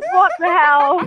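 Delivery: shrill, high, loud scream. Recounting monkeys jumping onto the speaker's kayak, retelling a scream. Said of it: "And I was just screaming like".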